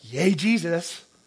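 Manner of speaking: scornful tone dripping with utter contempt. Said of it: "with just utter contempt".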